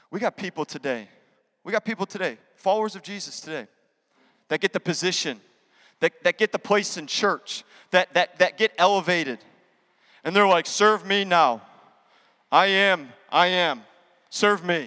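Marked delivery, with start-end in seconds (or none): 10.6-14.8 very slow, pompous, self-important put-on drawl. Preaching about followers who get elevated in church, imitating them: put-on voice of elevated churchgoers. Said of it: "I don't know what that voice is".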